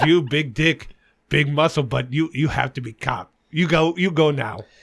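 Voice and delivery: put-on accent of a woman. Retelling what a woman said to him, imitating a woman's accent.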